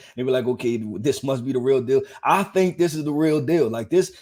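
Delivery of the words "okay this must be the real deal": plain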